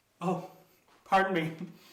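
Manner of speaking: talking with mouth full, chewing. Host caught eating brownies apologizes to viewers, talking with mouth full. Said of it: "You caught me with my mouth full".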